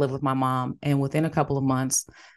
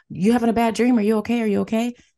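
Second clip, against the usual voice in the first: put-on high, raised yell as if from afar; 8 semitones higher than usual. Recounting a night attack, the speaker imitates their mother calling from upstairs, imitating mom yelling. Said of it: "she's yelling at me downstairs".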